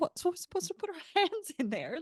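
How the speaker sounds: very high, put-on British accent. Retelling what a woman asked after hearing the answer, in her British accent. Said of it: "said in her delightful British accent".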